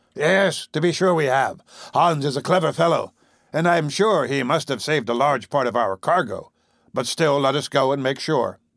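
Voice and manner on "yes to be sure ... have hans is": plain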